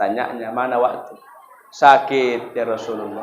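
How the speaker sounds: faint, low, ill-sounding voice.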